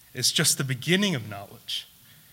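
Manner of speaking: stress on the beginning, otherwise plain delivery.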